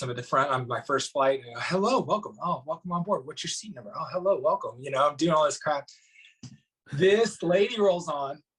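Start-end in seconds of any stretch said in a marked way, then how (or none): 1.6-4.8 jittery, nervous, eager delivery. Retelling greeting passengers on a first flight: imitating own nervous greeting. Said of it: "I'm all nervous".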